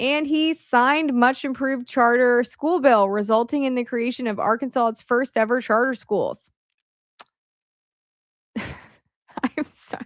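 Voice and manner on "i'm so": giggling, laughing through the words. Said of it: "I'm laughing because it's so funny reading that out loud".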